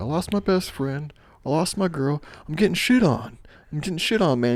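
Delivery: furious angry yell. Retelling a movie scene where a character yells at the cameraman, retelling an angry yell. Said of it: "He's yelling at the cameraman".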